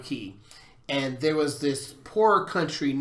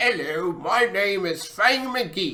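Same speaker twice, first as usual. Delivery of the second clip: funny, goofy, high, drawn-out voice; 5 semitones higher than usual. Explaining role playing with an example of a funny voice, Fang McGee voice. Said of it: "talking in funny voices".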